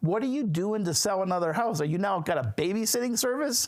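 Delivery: play-acted, restrained, mild, high-pitched scream. Retelling what his wife said as he pulled in: imitating Kathleen screaming. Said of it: "she comes out of the front door screaming".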